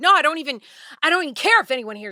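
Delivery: loud, heated, out-of-control ranting. Retelling a street argument, imitating him losing it and yelling. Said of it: "losing it".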